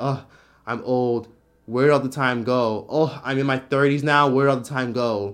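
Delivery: ordinary talk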